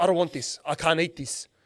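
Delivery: as rude as possible, acted out. Retelling a customer's complaint about food: imitating a rude customer. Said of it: "In the rudest way possible".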